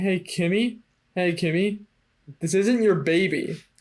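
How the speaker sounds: ordinary talk, nothing marked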